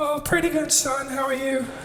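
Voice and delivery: very high squeak, like inhaled helium. Retelling a phone call with his dad, giving the dad's answer in a high helium voice. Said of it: "sounds like the helium plant's leaking again".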